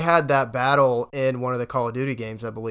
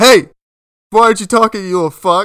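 very loud, pitched-up taunting voice; 8 semitones higher, 13 dB louder than usual. Retelling what a thirty-year-old in the game lobby would say: imitating a thirty-year-old lobby player. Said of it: "Some thirty-year-old in the lobby would be like".

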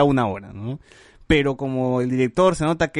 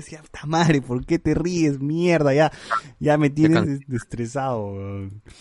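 normal talking voice

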